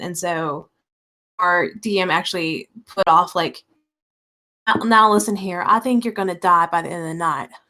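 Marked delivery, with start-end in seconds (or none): 4.8-7.5 put-on very thick Southern villain voice, rattled off fast. Retelling how the dm voiced a leader from the south, in a southern accent. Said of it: "so he had a very Southern accent".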